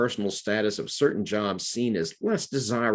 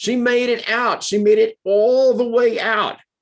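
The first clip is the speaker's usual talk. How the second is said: put-on loud, shrill, high, belted New York accent; 13 semitones higher, 8 dB louder than usual. Quoting a movie line announced loudly to a secretarial pool: Joan Cusack New York accent. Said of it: "Apologies for my New York accent".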